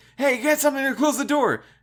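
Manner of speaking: very high, shrill, loud yell. Retelling a game scene where the girl shouts at Nick: imitating Clementine yelling. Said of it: "Clementine's yelling".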